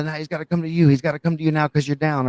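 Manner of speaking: mock screaming. Retelling how someone screamed instructions during a match: imitating Mikey screaming. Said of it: "Mikey was screaming".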